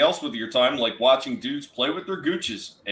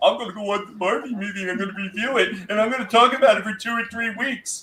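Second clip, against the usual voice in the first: high, pitched-up, unmanly-sounding male voice; 7 semitones higher than usual. Mocking guys who announce they will review the barbie movie: imitating a non-masculine-sounding guy. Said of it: "you sound a little bit, uh, non-masculine when you say".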